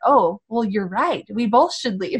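ordinary talk

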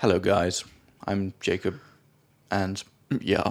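acted flat, lifeless, awkward monotone. Recalling how they sounded on their first episode: mimicking own flat delivery. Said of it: "I just sounded so flat".

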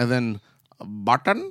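put-on sing-song Indian accent with swooping tune. Trying to pronounce an author's surname aloud: put-on Indian accent. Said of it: "an Indian accent".

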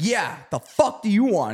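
put-on hostile, confrontational tone. Retelling how a kid confronted two strangers: imitating an aggressive kid. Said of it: "All aggressive".

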